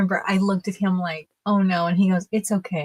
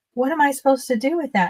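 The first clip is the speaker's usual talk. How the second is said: mock annoyed, irritated and angry, pitched-up voice; 6 semitones higher than usual. Ice cream server retelling a customer upset over a large cone; imitating an angry woman. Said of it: "she was so mad at me".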